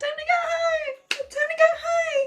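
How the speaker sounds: silly, very high, loud cartoon announcer voice. Demonstrating an announcement into the rooms, cartoon voice. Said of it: "like in a cartoon voice?".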